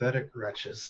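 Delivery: low, quiet mutter under breath. A player describes their character looking down at corpses, muttering under breath. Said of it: "mutter under my breath like".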